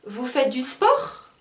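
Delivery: pitch climbs up at the end of sport. French lesson on informal questions: rising pitch on sport. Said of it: "à la dernière syllabe, je monte, je suis un peu plus dans les aigus, je monte la voix".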